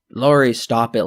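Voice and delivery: ordinary talk, nothing marked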